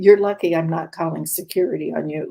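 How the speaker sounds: angry, furious tone. Retelling what she told the doctor while furious: imitating her own furious words. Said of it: "I was furious".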